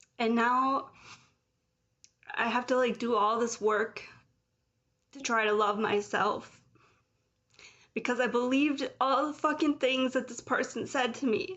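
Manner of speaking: heated, angry, emotional outpouring. Recounting how someone's words hurt them, the speaker is getting emotional. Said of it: "I'm sorry I'm getting emotional".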